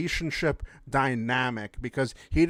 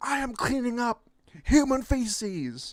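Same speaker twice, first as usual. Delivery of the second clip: mock crying yell, very high-pitched, drawn-out sobbing wail; 10 semitones higher than usual. Retelling the same worker, red in the face: imitating someone crying while yelling. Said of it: "this person's crying".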